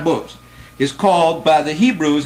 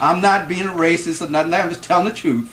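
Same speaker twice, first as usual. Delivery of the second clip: ordinary talk, nothing marked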